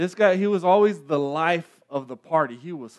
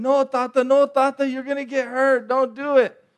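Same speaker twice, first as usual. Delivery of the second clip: high-pitched yelling in a put-on child voice; 8 semitones higher than usual. Speaker recalling being a little kid in the pool, retelling a childhood yell. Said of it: "I was yelling".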